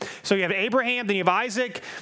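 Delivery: ordinary delivery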